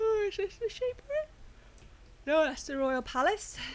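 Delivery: very high voice stretched through a yawn. Checking out the royal palace, yawning while talking. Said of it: "Sorry about the yawning".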